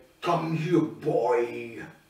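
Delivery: put-on, drawn-out devil character growl. Retelling a film scene, imitating the devil guy. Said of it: "and he's like".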